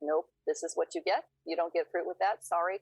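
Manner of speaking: mock-flat, grumpy monotone delivery. Retelling what a grumpy woman at breakfast told them, imitating a grumpy monotone.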